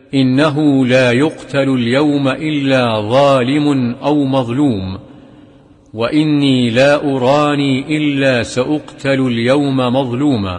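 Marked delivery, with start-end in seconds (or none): none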